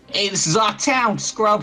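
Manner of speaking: loud, very high, squeaky tough-guy voice. Describing a game character, speaker tries his line in a higher-pitched thug voice. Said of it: "He's kind of the higher pitched thug voice".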